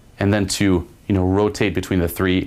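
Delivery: ordinary delivery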